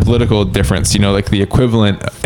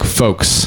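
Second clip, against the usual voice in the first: mechanical, stiff, sharp falling tone on folks; 3 dB quieter than usual. Imitating a sentence-final habit, stiff sharp pitch drop on folks. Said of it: "like a mechanical, it's like a railway signaling arm that drops at the end of a sentence".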